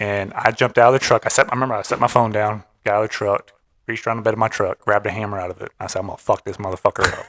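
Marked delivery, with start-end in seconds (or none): 6.0-7.2 put-on voice of instant fury. Retelling grabbing a hammer from the truck: imitating own instant rage. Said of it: "instant rage".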